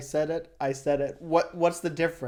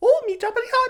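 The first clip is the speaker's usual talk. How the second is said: very high, silly, goofy mocking voice; 4 dB louder than usual. Doing a mocking impression of a movie character's speech: imitating Jar Jar Binks. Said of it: "me making fun of Jar Jar Binks".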